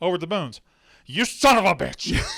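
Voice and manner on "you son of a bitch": mock enraged, bitter, furious outburst. Retelling how a coach reacts in a scene: imitating a furious outburst. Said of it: "he gets fucking furious".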